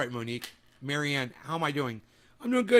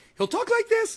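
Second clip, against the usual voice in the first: very high, loud, cracking voice; 6 dB louder than usual. Speaker mocks a Breaking Points host's way of talking, Saagar impression, cracking voice. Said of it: "like he's a little kid and his voice is cracking".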